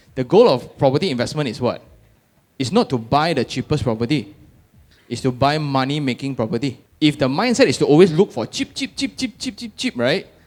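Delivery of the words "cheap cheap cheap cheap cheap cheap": very high, soft, rapid bird-like chirping. Lecturing on property investment, repeating a word, chirping like a bird. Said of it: "sounding like a bird".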